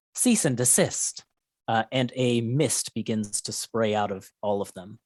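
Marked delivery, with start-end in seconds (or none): 0.2-1.3 synthetic female robotic machine AI voice. A game master voices the enemy group the players are fighting, robotic feminine AI voice. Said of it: "very much a robotic A I sort of feminine voice".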